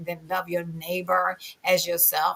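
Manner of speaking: ordinary talk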